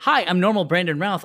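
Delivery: smug, self-satisfied, self-pleased tone. Retelling what Brandon Routh said in his video: smug Brandon Routh impression. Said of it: "And he was so smug".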